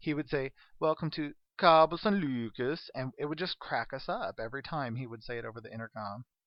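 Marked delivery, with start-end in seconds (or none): 0.8-2.9 put-on loud, booming, slow Scandinavian accent. Imitating a cruise director's announcement over the intercom: Scandinavian accent impression. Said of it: "was like Norwegian".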